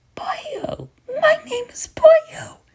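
cartoon voice cracking throughout. Introducing a made-up character named Boyo, the speaker uses a Toad voice. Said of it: "I have a cracked up voice, and I sound like Toad".

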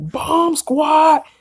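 mock fired-up, high-pitched scream. Describing how Deontay Wilder always yells, imitating Deontay Wilder screaming. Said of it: "he screams like".

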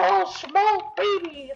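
put-on high, young-sounding, unbroken voice. Recalling how much deeper the voice has become: imitating own younger, higher voice. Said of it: "my voice has changed since then".

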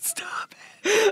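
high, hissed, hushed whisper. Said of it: "I'm like".

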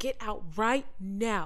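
yell at top of voice, dragged out slowly. Retelling shouting at a friend in the water, re-enacting a top-of-voice yell. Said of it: "yelling at the top of my voice".

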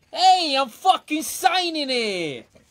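put-on Bronx accent, loud and very high. After being asked for a Bronx accent, speaking in a Bronx accent. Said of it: "Can you do a Bronx accent?".

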